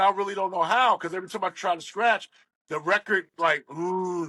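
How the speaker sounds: usual speaking voice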